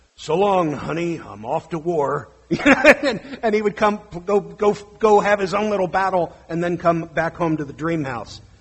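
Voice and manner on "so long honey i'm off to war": deep, grown-man voice. A parent retelling their five-year-old son's g.i. joe play: child's put-on man voice. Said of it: "doing his best man voice".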